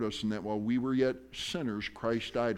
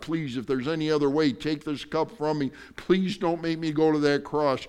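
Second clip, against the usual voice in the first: put-on, acted begging and pleading voice; 4 semitones higher, 7 dB louder than usual. Retelling a prayer in the garden before the cross, acting out begging. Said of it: "begged God".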